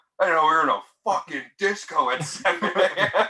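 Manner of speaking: put-on, high, projected yell. Retelling how a man yelled over the music: imitating a man yelling. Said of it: "he yelled it and projected it so it went over the music".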